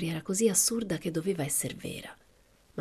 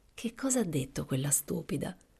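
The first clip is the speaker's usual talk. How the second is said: ordinary delivery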